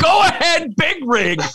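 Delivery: very high screamed shout. Recalling broadcasting a major on the mic, re-enacting a scream. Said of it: "I get to scream".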